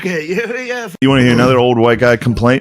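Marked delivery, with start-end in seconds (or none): 0.0-0.9 Dublin Irish accent pitched way up high. Showing a Dublin Irish accent when asked: Conor McGregor Dublin Irish accent. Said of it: "Conor McGregor type".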